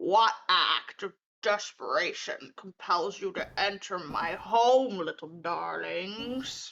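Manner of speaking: low, croaking toad voice. Voicing the toad-like creature Bevlorna addressing the group, in a low croaking voice. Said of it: "says in a low, croaking voice".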